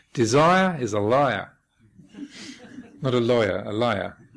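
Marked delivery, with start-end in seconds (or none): 0.1-1.5 put-on slow, loud, drawn-out Australian accent. Quoting what he said back then: imitating an Australian accent. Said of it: "he sort of did it with an Australian accent".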